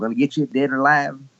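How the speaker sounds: put-on Texas accent. Recalling a former Texas accent by imitating the past president: imitating the past president's Texas accent. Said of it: "I did speak sort of like our past president".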